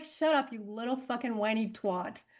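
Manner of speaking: scolding, put-on spirit-guide voice. Answering what her spirit guide's catchphrase would be: voicing her spirit guide scolding. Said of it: "She'd be like".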